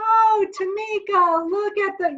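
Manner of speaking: put-on high, drawn-out baby-talk voice with long stretched vowels. Showing how people naturally talk to babies: high-pitched parentese, elongated vowels. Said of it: "that kind of high-pitched voice".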